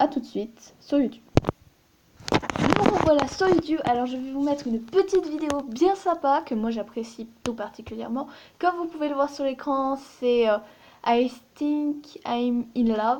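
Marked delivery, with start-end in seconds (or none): 11.0-13.2 slow English spoken with a French accent. French speaker says an english video title aloud, in a french accent in english. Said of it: "mon accent anglais est très euh, est bien montré dans cette prononciation".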